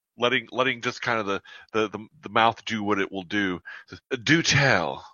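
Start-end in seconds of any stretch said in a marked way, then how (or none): 4.2-5.0 put-on Southern accent, best attempt. Voicing a character replying to another's remark: best Southern accent. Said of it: "does his best Southern accent".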